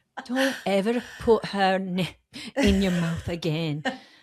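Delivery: furious, seething, put-on Scottish accent. Retelling what Nathan said, slipping into a Scottish accent. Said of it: "I'm going Scottish again".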